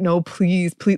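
mock desperate, begging, pleading tone. Acting out the woman in horror movies begging the guy: imitating desperate begging. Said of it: "desperately like, ... begging".

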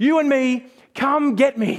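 put-on high, drawn-out, defiant, challenging shout. Retelling a man on a ship in a storm; retelling a shout to God. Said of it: "He's shouting out to God".

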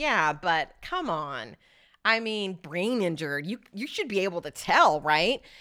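snarky, sarcastic, dumb-sounding drawl. Showing listeners how a jury hears the argument: snarky, stupid-sounding voice. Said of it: "I've made it kind of snarky and kind of stupid sounding".

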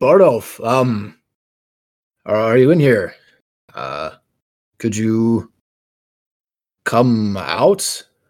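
careful, cautious, slow but loud call. Calling into an area for Bardolph to come out: careful but loud. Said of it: "carefully but loudly enough".

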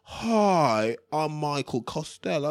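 mock upper-class voice. Imitating Mike Costello's way of talking: imitating Mike Costello's posh talk. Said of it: "you'd have thought he owned a bloody Bentley the way he used to talk".

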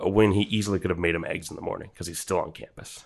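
ordinary delivery

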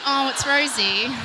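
normal talking voice

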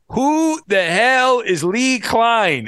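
put-on heavy Mexican accent laid on thick, slow. Retelling a radio caller's question, in a thick mexican accent. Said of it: "in this like thick uh, you know Mexican accent says".

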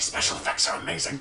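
quiet hushed whisper. Voicing a worried audience member in the front seats: whispering audience member. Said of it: "They're just kind of whispering".

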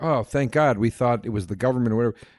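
ordinary talk

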